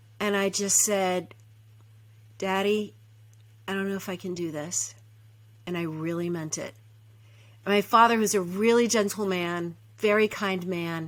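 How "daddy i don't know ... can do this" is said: very soft, murmured, hushed voice. Retelling what you said to your father, in a real quiet voice. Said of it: "I just in a real quiet voice".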